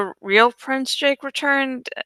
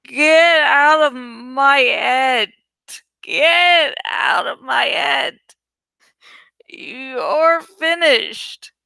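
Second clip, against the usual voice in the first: slurred, sloppy speech, words running together; 2 semitones higher than usual. Narrator reads a man seemingly answering himself, in a slurred voice. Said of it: "he said in a slurred voice".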